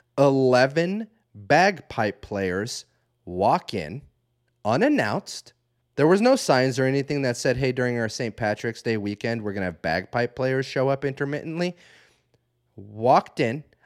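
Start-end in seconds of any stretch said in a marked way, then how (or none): 0.2-5.5 slow, deliberate, each word laid out carefully. Telling a story to listeners, speaker repeats a sentence, saying it slower. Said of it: "I'm going to say that slower".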